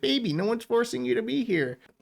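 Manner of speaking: high-pitched voice with swooping pitch.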